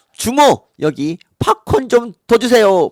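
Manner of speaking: high-pitched, loud calling out.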